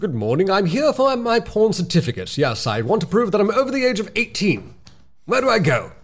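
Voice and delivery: terrible put-on English accent, high-pitched. Acting out a person requesting an age certificate, in the worst english accent. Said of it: "That's the worst English accent I've heard".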